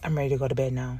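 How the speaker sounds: blank, emotionless, very low, hushed delivery. Retelling a story, quoting her as she said it, imitating a flat, emotionless voice. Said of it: "There was zero emotion when she said that".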